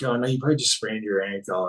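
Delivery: ordinary delivery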